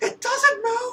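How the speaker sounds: put-on yelling. Retelling a ride where the tree didn't move: retelling own yell. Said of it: "I was literally yelling on the ride".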